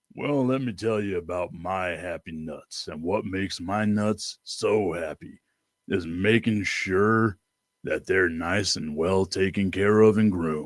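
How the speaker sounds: put-on voice pitched very low, slow. Pitching a whole commercial, doing it in the Sam Elliott voice. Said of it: "like doing the Sam Elliott voice of like".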